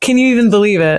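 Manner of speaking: normal talking voice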